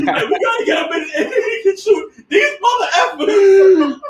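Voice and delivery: high, loud, laughing mocking shout. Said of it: "He's like".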